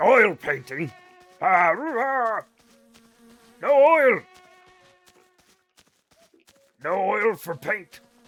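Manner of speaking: slow, drawn-out creature voice with pitch swinging wide. Acting out what they said about oil paintings: Oblivion orc voice. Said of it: "they talk like a fucking Oblivion orc".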